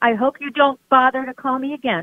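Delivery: put-on woman's voice. Repeating a woman's parting line back, doing an imitation of her. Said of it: "That's my imitation of her".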